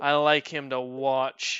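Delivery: loud, slow woman's call from afar. Voicing a woman heard from a distance: woman character voice. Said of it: "you hear from the distance the woman go".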